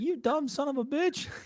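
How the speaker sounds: very high, slow laughing jeer. Retelling how an old pitcher taunted a batter, imitating someone laughing while talking. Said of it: "And he's just laughing".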